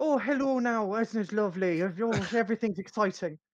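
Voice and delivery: put-on Southern Irish accent. Mocking an Irish accent that is not the speaker's own: put-on Limerick or Dublin accent. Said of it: "the Limerick, Dublin, like".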